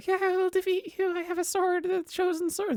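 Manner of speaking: put-on very high voice of a small child. Retelling a funny post, acting out the child hero answering the Dark Lord: acting out a child hero. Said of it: "the hero is like".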